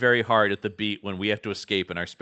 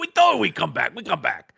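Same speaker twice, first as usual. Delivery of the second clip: rough, very high, creaky little alien squeak; 10 semitones higher than usual. Quoting the Anzellans coming back at the end: imitating an Anzellan. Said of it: "they go".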